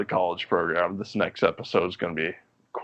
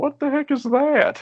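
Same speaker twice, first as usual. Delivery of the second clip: put-on very high, small voice with Southern accent; 3 dB louder than usual. Recalling what the listener said driving on the highway: Phil Southern voice. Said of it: "In like your little Phil Southern voice".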